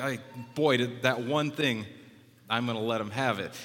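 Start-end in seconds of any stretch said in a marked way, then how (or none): none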